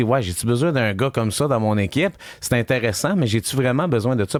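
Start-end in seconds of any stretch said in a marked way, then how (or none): none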